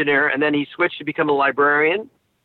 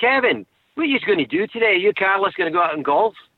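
put-on Glaswegian Scottish accent, local Glasgow speech; 4 semitones higher than usual. Speaker imitating how someone from glasgow would talk to his friend, glasgow accent. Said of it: "he would talk like this".

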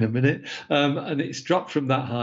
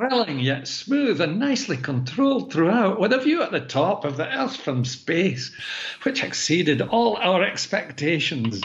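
put-on Scottish accent, pitched up; 5 semitones higher than usual. Quoting what he said after landing back in the Mojave Desert, in a put-on Scottish accent. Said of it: "better do the accent".

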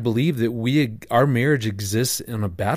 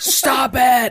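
shrill, sudden, very high, loud yell; 13 semitones higher, 5 dB louder than usual. Retelling how he stopped a family conversation: imitating own yell. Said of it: "I yell out".

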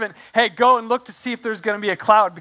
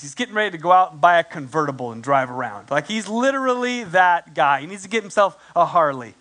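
ordinary delivery

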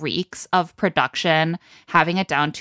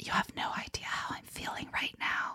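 hushed, breathy, soft, intimate whisper. Retelling what a woman said on a date: imitating someone whispering. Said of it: "and then she whispers".

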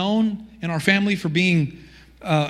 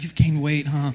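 put-on grave, solemn tone, much lower; 4 semitones lower than usual. Speaker retelling how a woman he considers a sister remarks on his weight: mock-grave, as if he's dying. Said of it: "she says it like I'm dying".

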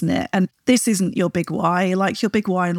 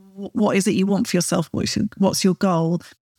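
plain

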